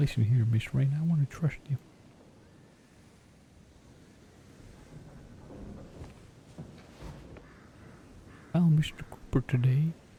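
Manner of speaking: low, hushed, confiding whisper. A character asks the listener to step closer, then confides: whispering. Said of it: "I'm only gonna whisper this".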